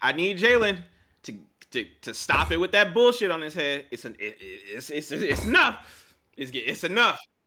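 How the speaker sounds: heated, high, swooping yelling, tripping over words. Complaining to the others, finally saying what's been on his mind: yelling. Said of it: "are you yelling about Jalen's hair".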